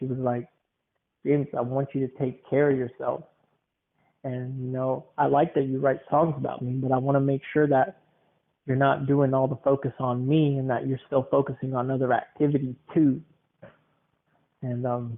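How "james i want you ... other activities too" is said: plain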